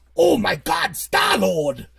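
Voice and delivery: put-on character voice, yelled. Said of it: "But he talks like this".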